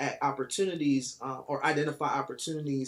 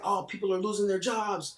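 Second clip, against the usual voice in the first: high, frightened, worried voice; 6 semitones higher than usual. Retelling what a buyer's agent said on the phone: imitating a scared voice. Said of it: "he sounded so scared on the phone".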